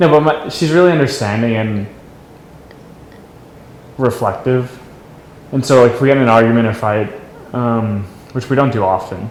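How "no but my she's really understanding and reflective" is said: teary voice, fighting back tears. In a conversation about vows, talking about her, holding back tears. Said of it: "I'm trying not to cry".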